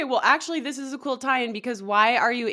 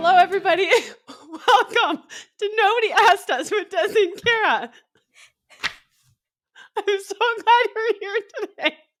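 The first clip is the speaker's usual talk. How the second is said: giggly talking, much higher pitch; 9 semitones higher, 4 dB louder than usual. Opening the podcast Nobody Asked Us, welcoming listeners, giggling while talking. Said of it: "I have a case of the giggles".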